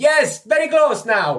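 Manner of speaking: high, loud, slow, projected calling voice. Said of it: "echoing down the hallway".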